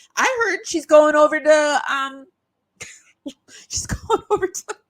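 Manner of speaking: talking through held-back laughter. Telling a made-up claim she admits is a lie, laughing while talking. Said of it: "I couldn't say it without laughing".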